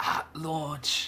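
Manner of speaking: very quiet, hushed, breathy whisper. Retelling what the game makers announced, adding the catch: imitating a hushed whisper. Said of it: "in hushed whispers".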